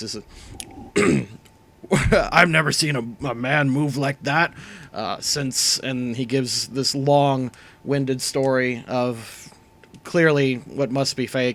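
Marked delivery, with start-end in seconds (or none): 0.0-5.8 gruff, rough-edged orc voice. Narrating to the players, the orc stops clapping and speaks to them: gruff orc voice. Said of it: "in uh, his gruff voice".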